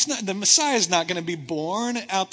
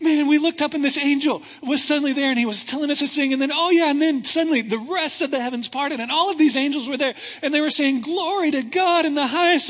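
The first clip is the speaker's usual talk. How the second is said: put-on high little girl voice, talking very fast; 7 semitones higher, 5 dB louder than usual. Acting out a little girl relaying the story, talking a mile a minute. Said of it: "this little girl that just won't stop talking like a mile a minute".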